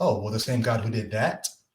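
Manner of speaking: ordinary delivery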